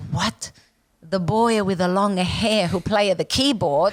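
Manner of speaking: put-on Italian accent. Retelling her mother's reaction to news of dating a boy, imitating Mom's Italian accent. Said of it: "in her Italian accent".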